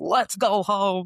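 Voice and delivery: put-on broad, rural American country accent. Mocking a movie trailer line: Matt Damon American country accent. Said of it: "Matt Damon in his American country ass, accent being like".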